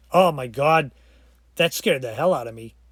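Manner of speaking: ordinary talk, nothing marked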